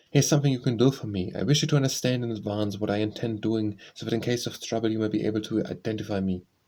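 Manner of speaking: usual speaking voice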